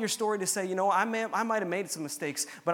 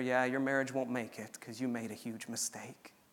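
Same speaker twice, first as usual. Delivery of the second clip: mock whisper, lower and quieter; 8 semitones lower, 7 dB quieter than usual. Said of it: "He whispers in your ear".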